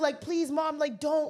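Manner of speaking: mock tearful, crying childlike pleading. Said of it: "Your fucking kids are crying".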